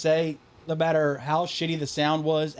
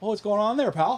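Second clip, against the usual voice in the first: put-on casual Canadian accent, higher pitch, throughout; 5 semitones higher than usual.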